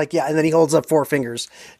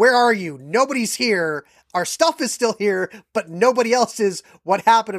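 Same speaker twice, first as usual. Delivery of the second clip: put-on panicked voice, higher pitch; 6 semitones higher than usual. Retelling friends' texts after the train left with the speaker, acting out panic. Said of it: "panic text messages from my friends".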